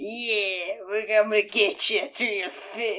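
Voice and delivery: put-on slow, somewhat aggressive British accent, drawn-out "yeah". Describing a favorite scene, quoting the broker's line in a put-on British accent. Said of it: "like it's a British accent".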